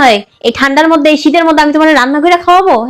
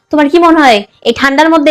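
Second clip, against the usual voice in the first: ordinary talk, nothing marked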